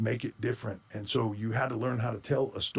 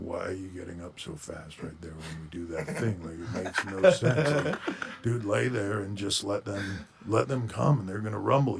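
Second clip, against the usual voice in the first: mopey, droning drawl, drawn out, droopy and glum; 3 semitones lower than usual. Retelling a close friend's wrestling advice: imitating Scott Hall talking like Eeyore. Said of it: "he just talked like Eeyore".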